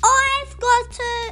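high-pitched shouting voice. Reading a story, Hedgehog shouts as the animals chase a nut, shouted. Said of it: "shouted Hedgehog".

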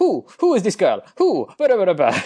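clumsy put-on Italian accent. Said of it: "in her bad Italian accent is like".

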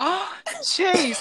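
very high, acted-out shocked exclamation. Retelling a teacher hearing Chase said a bad word, imitating her acting shocked. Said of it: "acting all shocked".

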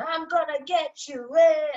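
high, loud, action-movie villain scream. Retelling the Exodus chase, voicing Pharaoh: imitating Pharaoh screaming.

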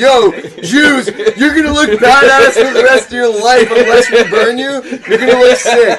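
loud, high-pitched mock hype-man voice.

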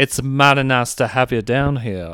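put-on Southern belle accent. Trying out voices, the speaker talks in a Blanche DuBois accent. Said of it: "accent of like Blanche Dubois".

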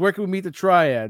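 put-on yelling. Retelling characters walking into a bar asking for Triads: imitating someone yelling. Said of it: "they just start yelling out".

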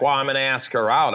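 plain

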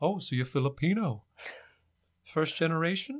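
put-on slow older man voice. Retelling an older man's question about heritage: imitating Ken Washington. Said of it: "and older man, he talked like this".

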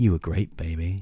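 speaking in a murmur. Tommy, lying on the grass, speaks to the woman; murmuring. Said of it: "he murmured".

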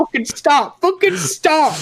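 desperate, very high, panicked begging tone. Retelling his own bad trip, retelling panicked pleading. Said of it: "I'm like freaking out".

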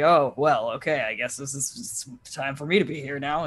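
groggy, sleepy, drowsy, half-awake mumble. Narrating a game, voicing the just-released ogre zombie as it turns around, sleepy voice. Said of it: "turns around sleepily and just like".

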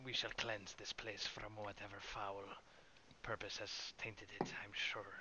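rapid, hushed half-whisper in character. Voicing a character who half-whispers to the big one: half-whispering in character. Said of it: "I whisper to, um, the big one".

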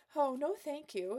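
high, breathy voice with a nervous giggle. Narrator voices a woman turning down an offer in a ballroom: breathy with nervous giggle. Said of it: "injecting a breathy tone in her voice along with a nervous giggle".

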